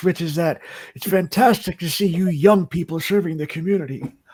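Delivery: put-on voice of an elderly man. Speaker demonstrates how the line should really sound, in an old person voice. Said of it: "it should sound more like this".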